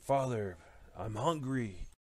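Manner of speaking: unearthly, inhuman, monstrous scream. A prayer is drowned out by a voice from the east: inhuman scream. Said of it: "muddled out by an inhuman scream".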